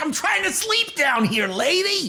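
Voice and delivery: harsh, throat-scraping, strained, high put-on character voice. Voicing a character telling a chattering lady to hush: throat-straining character voice. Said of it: "That voice is very hard on my throat".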